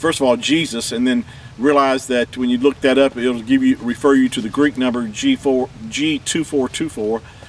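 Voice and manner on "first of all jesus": normal talking voice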